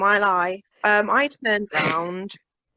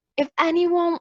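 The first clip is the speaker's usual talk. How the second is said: put-on American accent, pitched up; 8 semitones higher than usual. Retelling what people said at the end of a gig, in a put-on American accent. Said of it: "I'm saying an American accent".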